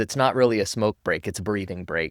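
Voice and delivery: ordinary talk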